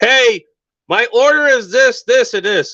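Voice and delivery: exasperated, frustrated shouting, high and loud. Retelling ordering at a box that couldn't hear him, retelling screaming at a box. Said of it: "I'm screaming at the damn box".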